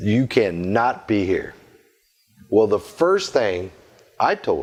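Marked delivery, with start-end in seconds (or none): 0.0-1.5 put-on low, deep, strong, firm voice. Retelling a thirteen-year-old girl ordering the speaker out, imitating her low, strong voice. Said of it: "her voice was very low and strong".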